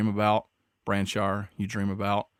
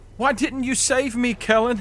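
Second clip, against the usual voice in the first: very high, loud, shrieking cry; 5 dB louder than usual. Narrating as tendrils pull her from your grasp, Irma screaming. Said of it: "as she's screaming".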